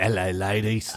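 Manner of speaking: put-on very British accent. Imitating another speaker's greeting: very British voice. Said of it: "it's very British".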